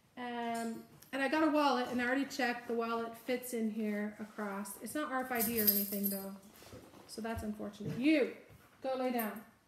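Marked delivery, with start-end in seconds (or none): 8.0-9.4 harsh, stern, mean scolding tone. Speaker breaks off to address someone nearby, using a mean voice. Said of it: "I had to use my mean voice".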